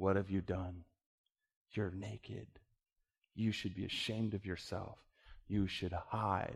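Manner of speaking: very soft, quiet, shaming, accusing voice. Speaker acting out the voice that turns on her: imitating an accusing voice. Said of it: "the voice turns on her and begins to accuse her".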